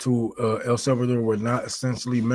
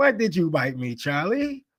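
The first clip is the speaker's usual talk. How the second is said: put-on high, swooping British accent; 6 semitones higher than usual. Retelling what a man said after he got a british accent, doing a put-on british accent. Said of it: "so he got this British accent".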